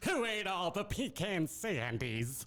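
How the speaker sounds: high cartoon-style voice. Doing an American Dad character impression: Roger the Alien voice. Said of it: "Roger the Alien?".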